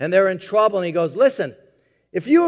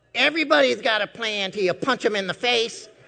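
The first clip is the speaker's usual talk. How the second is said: squeaky, high-pitched voice; 3 semitones higher, 6 dB quieter than usual. Describing how Mike talks, the speaker quotes him in a squeaky high voice. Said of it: "He's got this squeaky high voice, and he goes".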